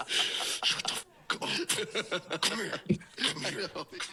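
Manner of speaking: furious voice, very high-pitched and drawn out. Retelling how the dad acted during mass: imitating a furious dad. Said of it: "the most furious anyone's ever been".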